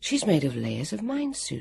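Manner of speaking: plain reading voice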